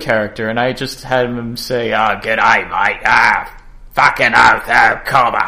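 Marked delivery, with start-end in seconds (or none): 1.9-5.5 put-on bogan Australian accent, louder. Describing a game character he made, giving the character's line, Bogan Baz voice. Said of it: "It's Bogan Baz".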